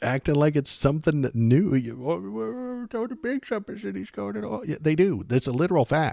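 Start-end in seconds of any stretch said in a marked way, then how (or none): 2.0-4.6 very high, sobbing, whiny crying voice. Mocking another speaker's words: imitating a whiny, crying voice. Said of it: "say it in a whiny, crying voice".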